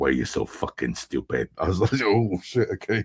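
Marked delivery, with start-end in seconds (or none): 0.0-1.5 scary, deep, quiet growling voice. Describing an angry movie character, quoting him, imitating a scary deep growl. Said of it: "his scary deep voice, just growling at people".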